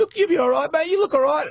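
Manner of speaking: very high, weepy, crying, comforting tone. Retelling a fall, a friend crying over them: imitating Jakey crying. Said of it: "do not fucking cry standing over me".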